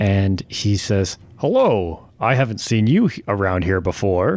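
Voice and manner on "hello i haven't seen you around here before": over-the-top heroic hero voice, swooping. Game master voices a stranger greeting a player from behind: overly heroic voice. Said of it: "a very almost overly heroic voice".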